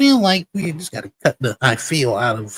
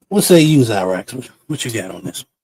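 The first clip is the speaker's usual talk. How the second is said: usual speaking voice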